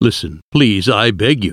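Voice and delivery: ordinary delivery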